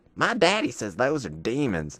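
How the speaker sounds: put-on small-town country kid accent. Retelling what his childhood best friend said about Pokemon cards, Hunter Bolin's little country accent. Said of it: "his little country accent voice".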